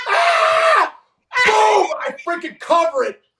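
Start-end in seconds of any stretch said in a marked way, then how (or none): 0.1-1.0 imitated scream, higher and louder. Retelling facing a pitch at his chest: imitating his own scream. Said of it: "I think I screamed".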